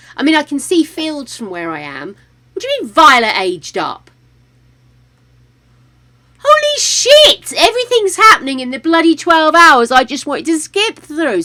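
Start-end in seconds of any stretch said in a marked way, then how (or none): 2.6-11.5 loud, high, swooping yell. Reacting with shock to a game event: yelling. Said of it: "Sorry, I'm yelling in your ears".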